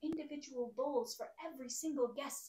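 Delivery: ordinary delivery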